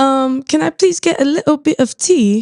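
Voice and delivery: attempted British accent, unconvincing. Asked to try one, asking for tea, put-on British accent that doesn't work. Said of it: "do a British accent".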